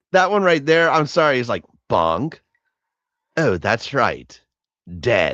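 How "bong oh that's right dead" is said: very low, slow, drawn-out, callous and uncaring. Retelling a line the Joker says about someone dead: imitating the Joker, no sympathy. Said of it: "no fucking sympathy whatsoever".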